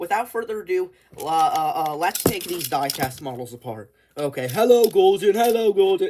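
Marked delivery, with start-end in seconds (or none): 4.5-6.1 high, very loud called-out voice. Playing with a toy train before taking it apart: Henry's voice. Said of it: "That's Henry's voice".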